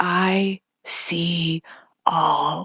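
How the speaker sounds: eerie, spooky, theatrical, dramatic delivery. Retelling what a woman said as she walked away, dramatic spooky reenactment. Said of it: "your dramatic reenactment of it".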